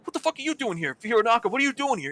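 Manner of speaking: put-on bewildered, confused outburst. A gamer retells reacting to Hironaka showing up in voice chat: retelling own confused outburst. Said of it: "I was in a state of confusion".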